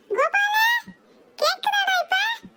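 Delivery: loud shouting.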